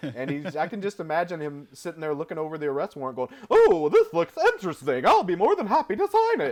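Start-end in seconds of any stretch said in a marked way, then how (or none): 3.5-6.5 very high, sing-song, swooping cartoon character voice. Imagining the character looking over an arrest warrant, imitating the voice actor's character. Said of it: "he did his voice just like this".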